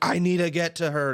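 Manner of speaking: high, screamed-out crying. Retelling how the guy across the curtain was screaming: imitating a man screaming. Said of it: "he's just screaming like".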